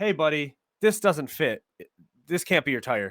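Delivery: ordinary talk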